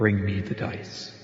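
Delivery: low, disembodied voice, as if inside the head. A game narrator voicing a voice each player hears, low voice of the Lady of Ash. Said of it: "the low voice that says".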